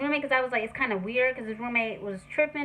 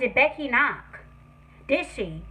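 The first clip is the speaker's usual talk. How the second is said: ordinary talk, nothing marked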